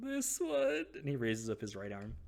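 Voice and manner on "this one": timid, meek, very high little reply. Retelling how Peter answered when asked his dominant hand, imitating Peter's meek reply. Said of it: "Peter meekly goes".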